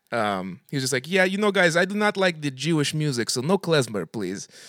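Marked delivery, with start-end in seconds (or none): 1.1-4.4 put-on Russian accent in English. Telling a story about a Russian accordion player, quoting him: imitating the Russian accordion player. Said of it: "this Russian guy who's like".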